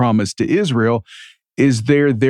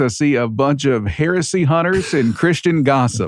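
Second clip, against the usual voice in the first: ordinary talk, nothing marked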